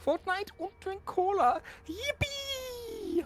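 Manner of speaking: put-on very high little boy voice, yippee drawn out. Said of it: "Is that your Lord Crow voice?".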